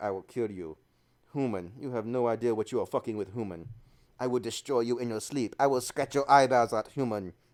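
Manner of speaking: dark, low, menacing, threatening cat voice. Fussing over a cat, the speaker voices its reply, Mister Penguin's imagined voice. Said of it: "He's like".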